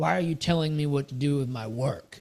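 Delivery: rough, gruff, growling voice. Retelling how a man reacts when a woman tells him how to work: retelling a growl. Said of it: "so he growls at her".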